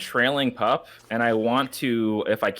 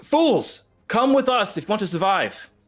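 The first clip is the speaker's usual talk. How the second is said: shrill, very high, in-character shouted yell; 10 semitones higher than usual. Voicing a character calling others to flee: in-character yell. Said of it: "I'm gonna yell".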